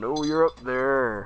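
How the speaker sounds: very loud calling voice. Narrator voicing a familiar voice calling up from the ground; slightly higher voice. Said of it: "It sounds like maybe a little higher".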